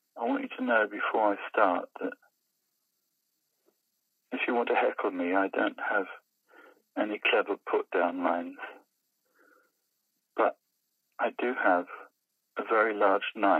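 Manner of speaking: soft-spoken, very quiet, hushed voice. Retelling a comedian's opening line at a comedy club, very quiet delivery. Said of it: "very quietly".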